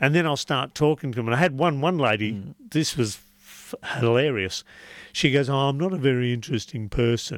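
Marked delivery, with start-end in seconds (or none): 5.5-7.4 put-on flat, dull, unexcited voice. Retelling what a woman said about herself, mimicking an unexcited voice. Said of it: "says in a non-exciting voice".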